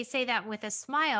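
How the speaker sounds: ordinary talk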